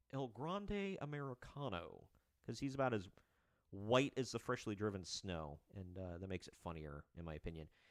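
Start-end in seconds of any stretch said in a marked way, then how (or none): 0.1-2.0 exaggerated, heavy, drawn-out Texan drawl. Saying the name El Grande Americano in Hank Hill voice. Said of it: "you got to say it kind of like uh, Hank Hill".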